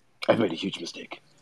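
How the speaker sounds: really deep, low voice sunk to the bottom. Showing off impressions they find easy to do; Will Arnett deep low voice. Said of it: "he's just really deep low voice".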